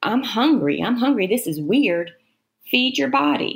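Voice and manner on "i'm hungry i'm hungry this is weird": ordinary talk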